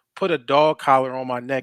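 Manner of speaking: ordinary talk, nothing marked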